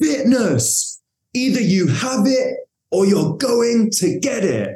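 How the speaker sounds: high, drawn-out, hollered coach-style shout. Retelling what the coach shouted during burpee training: imitating Justin shouting. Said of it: "he shouts".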